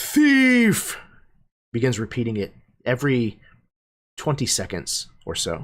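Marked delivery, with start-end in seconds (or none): 0.0-1.0 shrill, very loud, high-pitched alarmed cry. Game master voices a magic mouth formed in the stone wall, very loud voice. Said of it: "in a very loud voice".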